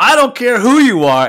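very loud yell that builds and rises. Retelling what another person kept shouting, retelling a yell. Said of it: "and just keeps yelling".

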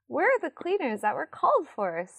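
very cheery huff, bright and swooping. Narrating a story, voicing Sophie at the opened door: cheerful huff. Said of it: "That was a very cheerful huff".

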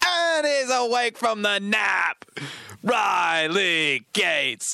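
put-on drunk, tipsy-sounding British accent. Narrating someone waking from a nap, in a drunk British accent. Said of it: "You sound like a British drunk".

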